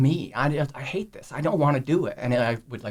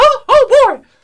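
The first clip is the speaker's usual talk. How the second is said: squeaked out, high and loud; 16 dB louder than usual. Asked whether you do impressions in your stand-up, show one in a Mickey Mouse voice. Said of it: "I did a Mickey Mouse".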